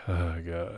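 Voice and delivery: play-acted worn-out, defeated man's voice. Acting out a character's line: imitating a defeated man. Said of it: "the defeated man".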